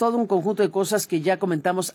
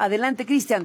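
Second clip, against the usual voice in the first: normal talking voice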